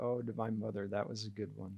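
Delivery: mock muttering under breath. Retelling what someone said when his own phone rang: imitating a mutter under breath. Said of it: "under his breath".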